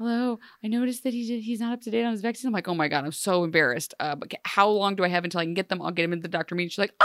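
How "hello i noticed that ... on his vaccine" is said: nervous, timid, frightened phone voice. Retelling the school nurse's call about vaccinations, imitating a scared voice. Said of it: "she sounded so scared to talk to me".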